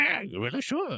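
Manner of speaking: very high put-on little dog voice. Acting out a deep talk with a pet dog, answering: put-on dog voice. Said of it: "doing his voice back".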